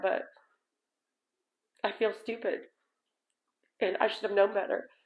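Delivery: crying while talking. Sharing being scammed out of savings, crying while talking. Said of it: "I didn't mean to cry".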